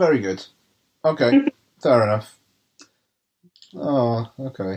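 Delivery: disappointed, deflated, grudging tone. Responding after another speaker gives it the benefit of the doubt, disappointed. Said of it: "you sound really disappointed".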